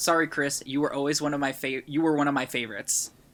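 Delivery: ordinary delivery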